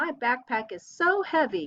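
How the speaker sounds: eager, excited, exclaiming read. Leading the class through exclamation sentences, saying the example line excited. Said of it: "So say with excitement".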